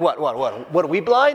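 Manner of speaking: mock sarcastic tone. Retelling religious rulers standing behind a sobbing man, acting out their sarcasm. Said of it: "these religious rulers are behind him being sarcastic".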